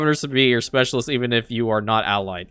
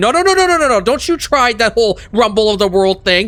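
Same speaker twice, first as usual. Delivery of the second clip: yelling, much higher and louder; 13 semitones higher, 4 dB louder than usual. Pointing at the screen, ordering it not to erupt, yelling. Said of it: "So I'm yelling at you straight up".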